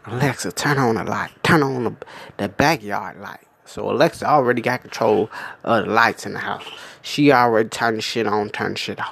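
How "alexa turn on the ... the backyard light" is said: quiet, soft, hushed half-whisper. Retelling a commercial where a mother asks alexa for the light: imitating someone half-whispering. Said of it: "And she whispered".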